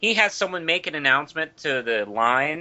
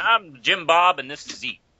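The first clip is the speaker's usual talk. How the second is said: fake American southern accent; 4 semitones higher than usual. Opening the comic news show, the host introduces the pair in a put-on southern accent. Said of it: "We've all taken southern accents this week".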